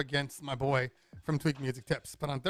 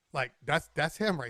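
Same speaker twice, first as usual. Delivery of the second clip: normal talking voice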